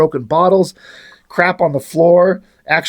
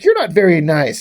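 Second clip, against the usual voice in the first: put-on growling character voice. Telling a story where Badrock stops and answers another character, retelling Badrock's growl. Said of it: "he growls at him".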